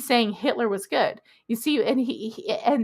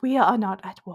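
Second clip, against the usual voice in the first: put-on smarmy voice, lower pitch; 3 semitones lower than usual. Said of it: "he's trying to be smarmy".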